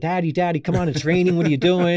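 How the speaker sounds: put-on high, yelling little girl voice. Retelling a rainy day, speaker acts out young Bella yelling from the car: imitating Bella yelling. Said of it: "she's yelling".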